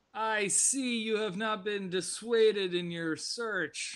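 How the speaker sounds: put-on Russian accent that slides into a Scottish one. Describing a game, voicing Polya's greeting, in her Scottish-sounding Russian accent. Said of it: "That is still your Scottish accent".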